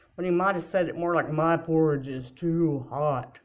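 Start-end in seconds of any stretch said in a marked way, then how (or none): 1.3-3.3 voice dropped low and deep. A storyteller voicing Daddy Bear after he tries his porridge, in deep Daddy Bear voice. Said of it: "his voice was deep".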